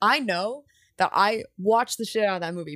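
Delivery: normal talking voice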